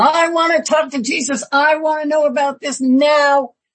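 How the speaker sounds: high, insistent, demanding put-on yell. Retelling a sunday school story of a man on the road: imitating someone yelling. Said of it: "just yelling".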